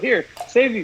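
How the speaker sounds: ordinary talk, nothing marked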